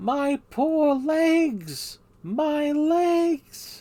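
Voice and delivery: very high, very loud, swooping cartoon character voice. Working through character voices, the speaker tries a Dory impression. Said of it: "I've had enough of Dory".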